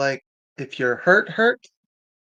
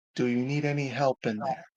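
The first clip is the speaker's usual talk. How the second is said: soft, soothing, calming, reassuring call; 6 dB quieter than usual. After signalling the companions, a character calls out to someone inside: calming voice. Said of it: "I call out in a calming voice".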